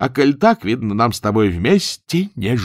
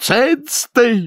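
abrupt, sudden high-pitched yell; 12 semitones higher than usual. Chonkin suddenly cuts off Nyura's story, with a sudden yell. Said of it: "заорал неожиданно Чонкин".

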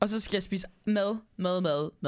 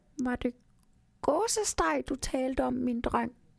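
small elf voice, much higher in pitch; 5 semitones higher than usual. Reading a Christmas story aloud, the elf Nisse Pok asks a question, Nisse Pok's small elf voice. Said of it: "Siger han med sin lille nissestemme".

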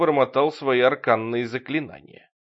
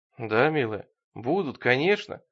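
ordinary delivery, nothing marked

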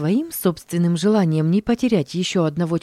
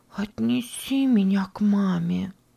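slow, soft, drawn-out whisper; 3 semitones higher, 4 dB quieter than usual. Narrating the girl Sara, her head on Pech's shoulder, whispering to him. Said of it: "прошептала".

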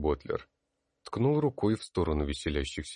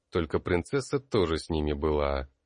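ordinary delivery, nothing marked

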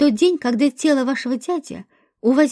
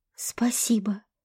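muttered, quieter and lower pitch; 4 semitones lower, 9 dB quieter than usual. Asif thanks Dronko, who has just handed him his stone; muttered. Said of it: "пробормотал Асиф".

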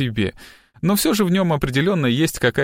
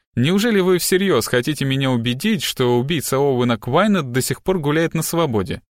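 plain reading voice

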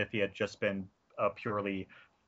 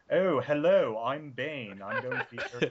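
refined, genteel, cultured, polished and proper; 4 semitones higher than usual. Discussing a movie villain's speech and inflection, in a Bane impression. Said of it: "his speech and inflection is like".

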